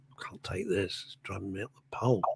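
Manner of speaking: fed-up muttering to herself. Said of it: "I go".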